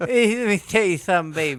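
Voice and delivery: put-on tipsy, drunk-sounding voice. Imitating Dusty Rhodes after he's been to the bar, drunk voice. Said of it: "Or Dusty Rhodes after the show, after he's been to the bar".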